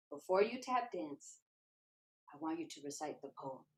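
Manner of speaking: soft, hushed half-whisper. Retelling being half-whispered to before tapping at a jam: imitating a half-whisper. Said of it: "he whispers in my ear".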